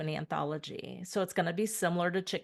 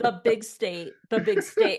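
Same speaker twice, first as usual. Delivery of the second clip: put-on imitated screaming, higher and louder; 3 semitones higher, 8 dB louder than usual. Retelling a teacher quoting the yell at a bus driver: imitating someone screaming. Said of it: "You were screaming at that bus driver".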